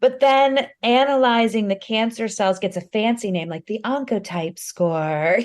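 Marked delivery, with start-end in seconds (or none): 3.5-5.4 light put-on, slightly posh educated British accent. Joking about the fancy name for cancer tests, a little bit British and educated. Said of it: "a little bit British and educated".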